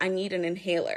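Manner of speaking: ordinary delivery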